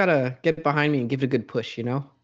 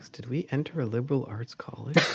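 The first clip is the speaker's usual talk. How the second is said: whispered aside, quieter; 9 dB quieter than usual. Whispering a question in character to a companion: whispering in character. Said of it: "I whispered to".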